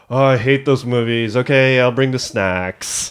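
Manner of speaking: play-acted, dry, tongue-in-cheek sarcastic tone. Retelling what Janet says about the movies: imitating a sarcastic remark. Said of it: "Janet's being sarcastic".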